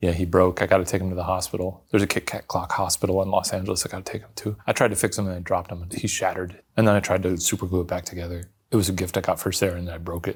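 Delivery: fast, flat, low one-note monotone. Speaker rattles off a story before the listener can ask questions, fast and monotone. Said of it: "you told that story so fast and monotone".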